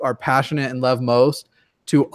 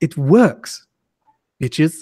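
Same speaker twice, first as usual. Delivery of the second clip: put-on British accent; 2 semitones higher, 4 dB louder than usual. Quoting a favorite line in a Richard Dawkins impression. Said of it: "my favorite quote of his".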